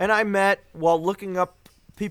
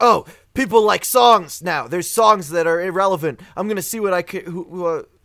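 ordinary talk

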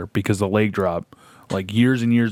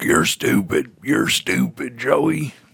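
slow, dragged-out, rough wrestler drawl; 4 semitones higher than usual. Retelling a wrestling match, do Jake the Snake talking to Joey, a really good Jake the Snake impression. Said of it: "That was a really good Jake the Snake".

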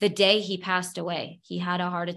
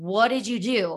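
slow, drawn-out yelling, words stretched. Retelling how a man yelled at the speaker, retelling a yell. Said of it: "he just yelled at me like".

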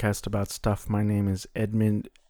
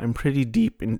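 voice breaking, cracking mid-phrase; 3 dB louder than usual. Talking about being deep into a game, voice cracking. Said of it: "my voice just cracked".

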